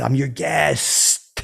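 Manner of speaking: put-on drunk voice, over-enunciating. Retelling telling the host he was a guest, imitating drunk over-enunciating. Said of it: "over enunciate".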